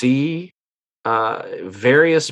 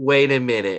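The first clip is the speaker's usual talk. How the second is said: normal talking voice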